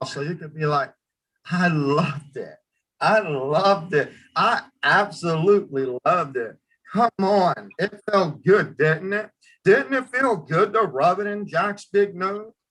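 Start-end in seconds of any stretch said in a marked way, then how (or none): 1.5-12.5 sarcastic, needling tone, rubbing it in. Demonstrating how to play the scene, the speaker delivers it sarcastic, with a sarcastic smile. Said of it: "this is where you can actually have a sarcastic smile".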